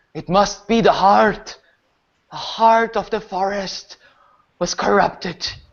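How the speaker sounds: final gasped words in a dying, last-breath voice. Voicing a dying figure speaking before going still: dying, last breath. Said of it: "with one last breath".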